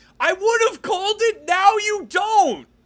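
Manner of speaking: very high-pitched, loud shouted outburst. Retelling what a man shouted about a movie sequel, retelling a shout. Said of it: "he just shouts".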